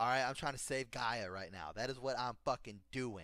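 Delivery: ordinary talk, nothing marked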